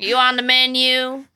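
imitated old man voice. Waitress retelling what two old guys at her table said: imitating an old guy. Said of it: "These two old guys are like".

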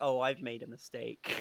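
put-on regretful voice. Laughing about a scene, imitating Daphne regretting her decisions. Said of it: "Daphne's like".

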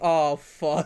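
ordinary delivery

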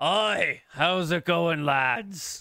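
put-on drunken dwarf character voice. Telling a story about a dwarf in an alley greeting the lads: drunken dwarf voice. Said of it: "a drunken dwarf".

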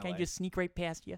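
put-on Michigan accent. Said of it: "Michigan accent".

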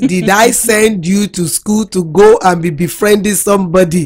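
put-on strong Nigerian accent. Parent retells what she said to her daughter about befriending someone: strong Nigerian accent. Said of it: "I spoke using my real Nigeria accent".

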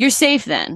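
extra sarcastic, laid on thick. Redoing a scripted exchange after being asked to sound more sarcastic. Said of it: "sound more sarcastic".

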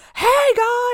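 loud, cheerful high voice.

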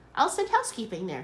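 ordinary delivery

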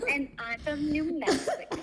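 put-on soft, hushed, high New Mexican accent. Recalling first meeting the person addressed: imitating Isela's New Mexican accent. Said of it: "my impression of Isela is New Mexican accent".

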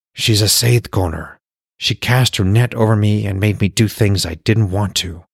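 dropped to a whisper. Clacky tells Frigg about the woman who made him do things, dropped to a whisper. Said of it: "Clacky's voice dropped to a whisper".

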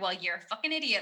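judgmental tone, full of judgement. Recalling being questioned, the speaker imitates the questioners in a mock-judgmental tone. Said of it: "Judgement in their voices of like".

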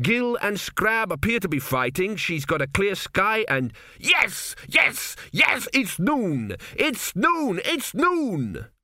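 very high, slow, stretched-out yelling. Reading a story aloud, voicing a priest calling out events: shouting. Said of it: "Why are you shouting into that bulrush?".

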